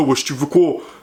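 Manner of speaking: put-on street thug voice. Retelling how Morgan Makeup talked while yelling on the phone: imitating her thug voice. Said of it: "elle a commencé à prendre une voix de racaille".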